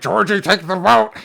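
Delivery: very loud, high, bellowing, slobbering clown voice. Retelling a scary scene, imitating Pennywise luring a kid: drooling Pennywise voice. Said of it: "his eyes are drifting and he's drooling".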